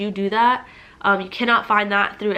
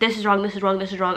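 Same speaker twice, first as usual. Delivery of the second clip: ordinary delivery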